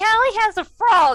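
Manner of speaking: high, loud, slow mocking voice.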